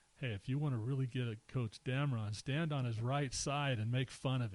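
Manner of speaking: normal talking voice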